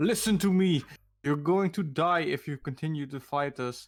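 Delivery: loud, menacing, as intimidating as possible. A player voices their character threatening a foe, in the most intimidating way possible. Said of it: "Say that in the most intimidating way possible".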